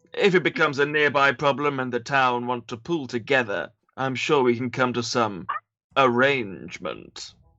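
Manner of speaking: calm, logical alien voice. In a tabletop game, a player voicing their character replies to another character, Spock-like character voice. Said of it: "character voice I'm doing".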